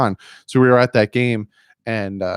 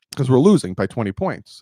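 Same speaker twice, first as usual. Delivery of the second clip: usual speaking voice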